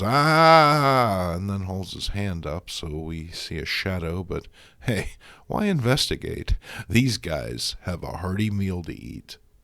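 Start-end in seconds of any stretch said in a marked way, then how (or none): 0.0-1.3 loud high-pitched yelling.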